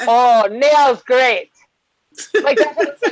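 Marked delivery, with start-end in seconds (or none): 0.0-1.5 put-on Polish accent. Recalling the lady who used to do their nails, imitating a Polish accent. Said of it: "Polish lady that used to do my nails".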